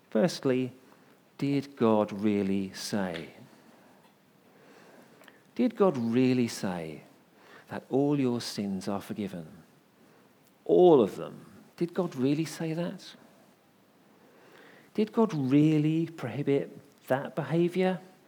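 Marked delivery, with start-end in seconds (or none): 1.4-18.0 put-on tempter whisper. Preaching, voicing the devil's doubting questions to the listeners: the devil whispering. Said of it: "He whispers".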